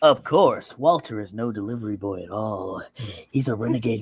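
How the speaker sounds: deep porn-style voice. Asked by another speaker to read this script aloud, in a deep porn voice. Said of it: "like deep, like porn voice".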